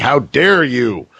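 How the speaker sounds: scandalized, huffy, indignant, outraged cry. Describing how people react to his announcements, the speaker acts them out: imitating people screaming. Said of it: "people will just start screaming at him like".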